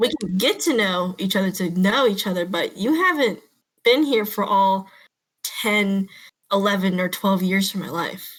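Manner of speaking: plain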